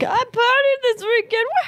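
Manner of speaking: high, mock excited cheering "woohoo".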